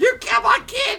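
screaming at top of lungs, shrill, very high and loud. Retelling a story, quoting a woman screaming at a man, retelling a scream. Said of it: "screaming at him in custody".

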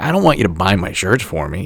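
ordinary delivery

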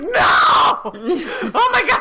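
put-on panic, very high-pitched and very slow. Describing an episode's ending as Jason tosses the clicker; acting out everyone freaking out. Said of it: "Like, freaking out".

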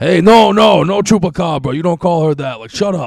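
loud, high, serious yet half-joking tone. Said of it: "got, like, real serious".

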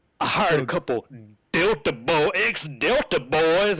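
put-on Texas accent. Retell an episode and quote what he says as the dude freaks out, in Michael Westen's Texas accent. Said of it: "and his Texas accent".

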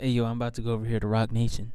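put-on whisper. Retelling what someone whispered to a kid: imitating someone whispering. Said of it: "he whispered to him".

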